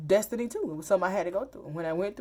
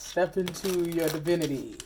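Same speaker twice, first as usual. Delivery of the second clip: put-on very masculine voice. Repeating a message heard while reading the cards: imitating a very masculine voice. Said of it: "I heard that in a very masculine voice".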